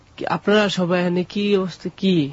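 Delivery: ordinary delivery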